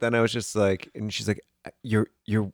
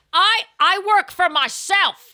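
put-on very high, very slow, loud New Jersey accent; 5 dB louder than usual. Imitating a loud diner at lunch: imitating a New Jersey man. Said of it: "he was so New Jersey".

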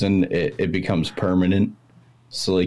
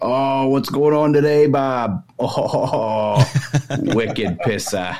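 very slow, put-on Maine accent, high and drawn out; 6 semitones higher than usual. Showing how the locals talk over beers, in a put-on Maine accent. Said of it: "the main accent comes out with everybody".

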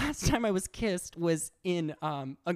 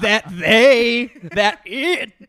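very loud, slow, dragged-out spiteful tone; 3 semitones higher, 13 dB louder than usual. Acting out, when asked how it would sound, a mock malicious tone. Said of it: "said maliciously".

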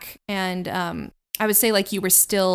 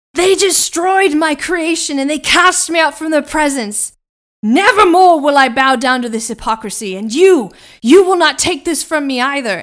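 very loud, pitched-up roar of defiance; 7 semitones higher, 11 dB louder than usual. Game master voicing a character just hit by a spell attack, yelling out. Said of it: "he yells out".

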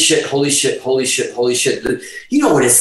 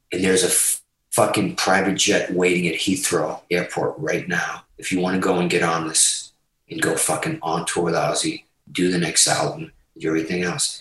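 put-on whisper, lower and quieter; 8 semitones lower, 7 dB quieter than usual. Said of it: "and he's whispering".

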